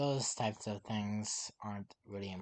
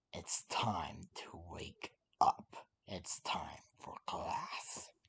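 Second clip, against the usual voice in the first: breathy, whispered, demonic tone; 5 semitones lower than usual. Narrating a story, voicing Taku as he wakes Aizawa for class, demonic tone. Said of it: "with a demonic tone".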